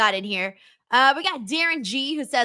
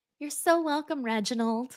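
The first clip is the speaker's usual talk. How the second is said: put-on, nice receptionist voice, quieter; 3 semitones higher, 5 dB quieter than usual. Playing a nice receptionist replying to a caller's thanks, in a receptionist voice. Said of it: "You got the voice".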